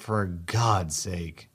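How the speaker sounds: muttered under the breath. Reading a story aloud, the narrator's own reply: muttered under the breath. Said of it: "under my breath".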